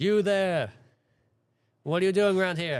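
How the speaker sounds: booming, high call from afar. Someone calls out from a distance at a stranger walking up, booming voice. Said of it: "in a booming voice".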